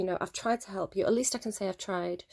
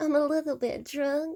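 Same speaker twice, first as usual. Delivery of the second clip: put-on high, slow little girly voice; 8 semitones higher, 4 dB louder than usual. Retelling how someone talks to win sympathy: imitating a little girly voice. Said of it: "She puts on a little girly voice".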